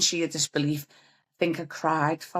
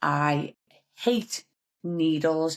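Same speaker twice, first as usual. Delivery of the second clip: hate stressed and drawn out slowly. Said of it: "And I hate needles".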